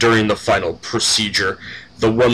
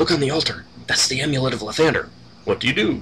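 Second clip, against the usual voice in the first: hushed half-whispered aside, barely audible; 4 semitones higher, 4 dB quieter than usual. Reading an adventure aloud, giving a sage character's line; half-whispering. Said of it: "Dimsworth the Sage whispers".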